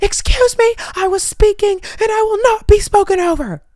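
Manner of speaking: mock screaming. Retelling a game where others talked over them: retelling a scream. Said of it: "I literally just screamed".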